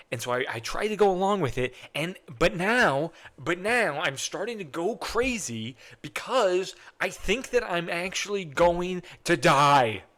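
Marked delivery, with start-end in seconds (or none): 2.3-9.9 slow, distressed, upset voice coming apart at the seams. Telling the others in an acted scene about a fear of dying: upset. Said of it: "I didn't realize you were so upset".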